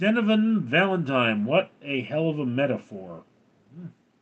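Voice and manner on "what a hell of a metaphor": ordinary delivery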